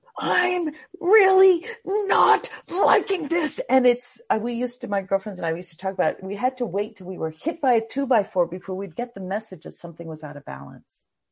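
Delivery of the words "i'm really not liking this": much higher, slow, alarmed pleading tone. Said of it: "Then it's gonna go".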